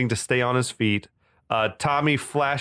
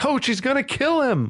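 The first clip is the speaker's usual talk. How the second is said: put-on, very high, blurted yell; 12 semitones higher than usual. Retelling a fight scene where someone warns the coach, imitating Alex yelling. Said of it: "yelling the obvious".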